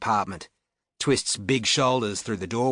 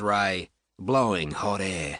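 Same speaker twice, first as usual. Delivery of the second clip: ordinary delivery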